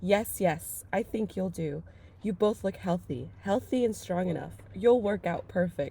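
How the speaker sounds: ordinary delivery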